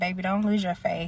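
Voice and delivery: plain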